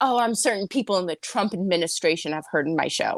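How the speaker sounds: mock dead serious, deadpan, straight, no irony or humor. Retelling a dinner where Ralph boasted: imitating Ralph, deadpan serious. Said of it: "deadpan serious".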